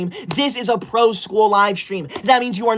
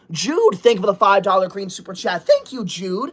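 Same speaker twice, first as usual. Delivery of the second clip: plain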